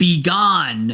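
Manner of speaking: voice of a huge, looming monster creature. Voicing a very large creature speaking to the players: large creature's voice. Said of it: "points its scythe in your direction and says".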